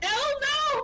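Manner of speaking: screaming voice, high-pitched. Voicing a character begging another to stop: screaming in character. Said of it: "Everyone's screaming their fucking head off".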